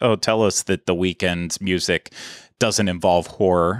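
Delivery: ordinary delivery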